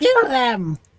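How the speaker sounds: put-on stern old woman voice, shouting. Voicing the old giant matron ordering her staff to attack: matron shouting an order. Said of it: "at her shouting and insistence".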